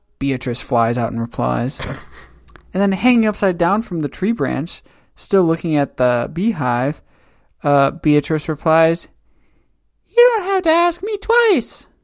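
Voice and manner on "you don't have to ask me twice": odd, squeaky, weird, high-pitched put-on voice. Reading a story aloud, voicing a character's reply in a weird voice. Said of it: "I started saying it in a weird voice".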